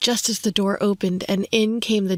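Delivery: ordinary delivery, nothing marked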